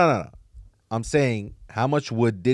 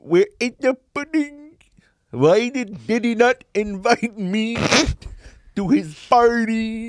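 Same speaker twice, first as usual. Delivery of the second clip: very high voice with the word party drawn out; 12 semitones higher than usual. Doing a put-on voice that listeners try to identify: Bill Cosby impression. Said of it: "Are you doing an Indian accent?".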